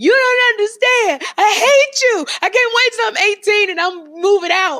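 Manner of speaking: put-on dramatic, very high, very loud shrill teenage scream. Retelling a teenage fight with mother: imitating own past screaming. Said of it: "I would scream".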